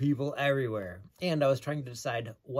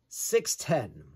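put-on heavy, thick Eastern European accent; 3 semitones higher than usual. Retelling what a very tall guy said to him, in thick Eastern European accent. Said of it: "says in a thick Eastern European accent".

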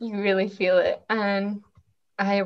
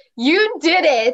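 even louder, fully projected, pitched-up delivery; 7 semitones higher, 6 dB louder than usual. Giving an arm a voice in an exercise, told again to say it even louder.

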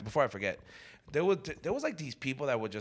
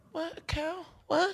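put-on drunk woman voice, much higher. Retelling saying hi to a woman who couldn't hear him, imitating her drunk. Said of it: "She's all drunk".

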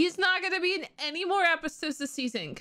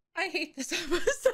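quick, laughing, unable to keep a straight face. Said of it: "I can't even say it with a straight face".

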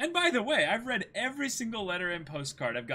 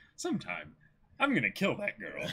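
very low, deep voice-acted character voice; 8 semitones lower than usual. Reading a comic line aloud as a voice actor might: Travis Willingham voice. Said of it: "I can just imagine Travis Willingham voice acting this guy".

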